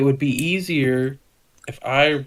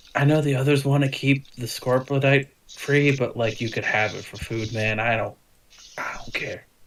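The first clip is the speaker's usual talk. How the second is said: conspiratorial, confidential lean-in stage whisper. A game character leans in toward the listener: half-whispering. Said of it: "he kind of like leans in and whispers".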